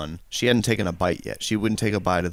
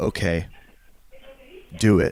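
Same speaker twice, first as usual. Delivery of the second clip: confiding stage whisper; 3 dB louder than usual. Retelling a wife's reply into an ear: imitating a wife's whisper. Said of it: "she whispered that in my ear".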